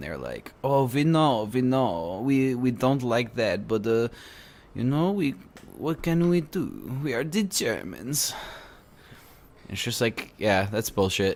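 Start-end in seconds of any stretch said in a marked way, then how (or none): 0.6-8.3 slow, higher-pitched mock German accent. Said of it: "that's a German accent".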